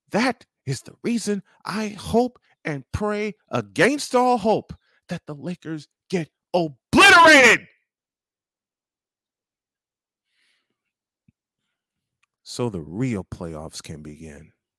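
proud delivery with a swooping pitch. Speaking aloud to people who keep calling you a fool: very proudly. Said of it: "I'm saying it very proudly".

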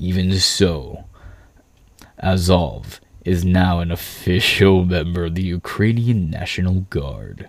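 dramatic, low, cool movie trailer narrator voice. Reading a news passage aloud in a cool narrator voice. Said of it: "why you gotta make them sound so cool?".

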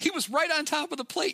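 put-on shrill yelling, pitched very high. Retelling someone thrown out of the game arguing with the umpire; retelling a yell. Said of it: "as he's yelling at the ump".

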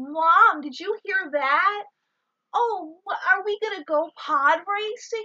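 very high, hammy, over-the-top kiddie voice. Imitating a child actor's line delivery: over-the-top kids' tv delivery. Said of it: "all his deliveries for every line sound like he's in, like, a fucking kids' T V show".

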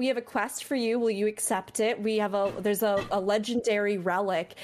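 plain

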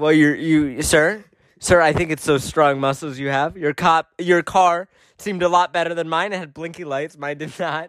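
ordinary talk

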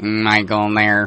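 imitated electrolarynx mechanical voice. Retelling a phone call from a friend's mother: imitating an electrolarynx voice. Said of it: "his mom had a cancer kazoo".

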